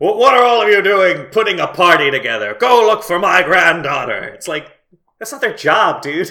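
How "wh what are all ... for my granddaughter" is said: loud, booming, regal yell. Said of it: "He starts yelling at everyone".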